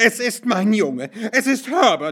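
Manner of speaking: crying out in a scream. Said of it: "schrie sie".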